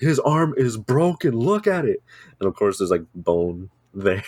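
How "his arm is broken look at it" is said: put-on alarmed, insistent yell, high and drawn-out. Recounting her dad bursting in and yelling at her mom, retelling dad's yelling. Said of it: "he's like yelling at my mom like".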